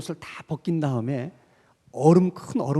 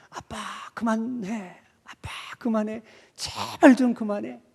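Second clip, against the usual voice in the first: high-pitched mock crying child's pleading voice; 6 semitones higher than usual. Retelling a child's plea to his father to stop: imitating a crying child. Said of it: "막 울면서".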